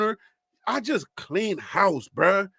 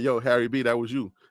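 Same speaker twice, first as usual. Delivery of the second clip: put-on speaking style, casual and relaxed; 9 semitones lower than usual. Imagining the filmmaker's reply after he hears the tape: imitating Ryan Coogler. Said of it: "He be like".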